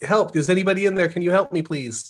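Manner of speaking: mild, calling-out voice. A player's character kneels outside an igloo instead of crawling in, yelling for help. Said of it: "start yelling".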